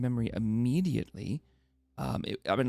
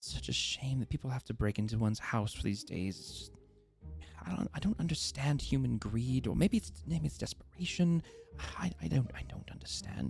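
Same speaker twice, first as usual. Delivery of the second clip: muttering under her breath, quieter; 5 dB quieter than usual. Voicing a homeowner shaking her head after checking the garden: almost talking under her breath. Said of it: "she's almost talking under her breath".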